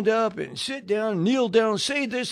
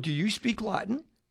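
put-on whisper, quieter; 7 dB quieter than usual. Retelling leaning over to ask during the church message: retelling a whisper. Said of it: "I'm whispering again".

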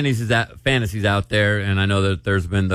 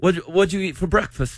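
bad, fake British accent, pitched higher. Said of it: "Our accents suck".

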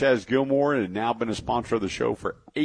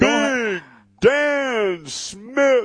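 booming, very high ring announcer call, name drawn out; 13 semitones higher, 5 dB louder than usual. Announcing another guest's name, like announcing a fighter. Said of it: "like a, announcing a fighter".

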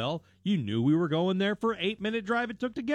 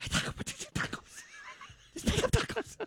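acted whisper-yell, much higher; 6 dB quieter than usual. Retelling ordering at Taco Bell with family, retelling a whisper-yell. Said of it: "I have to whisper yell".

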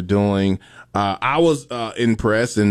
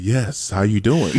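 imitated on-air announcer voice. Describing someone once the microphone comes on, doing her put-on radio voice. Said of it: "when that microphone comes on, she's like".

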